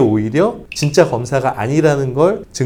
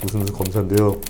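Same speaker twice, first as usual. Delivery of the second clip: put-on official's phone voice, deep and hushed; 6 semitones lower, 5 dB quieter than usual. Imitating a phone scammer posing as a prosecutor: deep low voice. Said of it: "목소리 딱 저음으로 깔아가지고".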